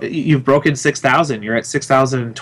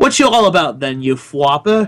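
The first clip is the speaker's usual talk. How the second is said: bad put-on Cockney accent; 3 semitones higher than usual. Showing how the word might sound as an insult: bad Cockney accent. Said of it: "almost like a Cockney i-, insult".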